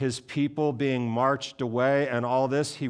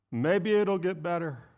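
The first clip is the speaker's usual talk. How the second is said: put-on higher grandmother voice; 5 semitones higher than usual. Preaching on Lamentations, voicing how optimism talks, imitating grandmother. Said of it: "my best imitation of my grandmother".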